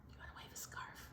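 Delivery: soft, hushed whisper. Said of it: "I don't know why I'm whispering".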